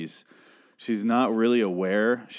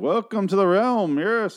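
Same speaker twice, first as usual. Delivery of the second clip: put-on old British king voice, pitched very high; 10 semitones higher, 4 dB louder than usual. Recapping a show, imitating Ezekiel talking like an old British king. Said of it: "Ezekiel talks like an old British king".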